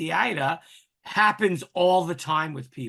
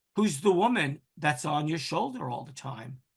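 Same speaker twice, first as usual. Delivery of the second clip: normal talking voice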